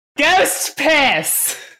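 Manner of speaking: shrill, very high, as-loud-as-possible all-out scream. Yelling the test phrase again as loudly as possible: yelling as loud as possible. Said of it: "As loud as you can go".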